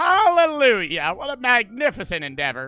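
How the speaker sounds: put-on country accent. Replying to a pitch for a video idea: country accent. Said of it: "I gotta stop doing the country accent".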